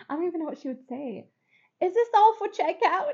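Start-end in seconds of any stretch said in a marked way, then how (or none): 1.8-3.1 put-on British accent, pitched up. Imitating a lady from the gas station: british accent. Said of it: "the British lady from the gas station".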